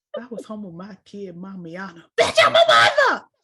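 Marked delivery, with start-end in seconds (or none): 2.2-3.1 play-acted, very loud, shrill, aggressive outburst. Quoting a movie line to another speaker: imitating an aggressive delivery. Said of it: "why are you so aggressive?".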